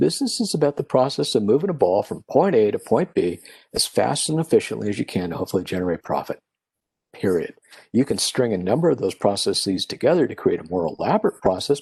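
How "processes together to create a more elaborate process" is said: ordinary talk, nothing marked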